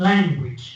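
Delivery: stress on "lan" in "language". Showing a class how to say the word: stress on LAN in language. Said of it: "So lang will be louder".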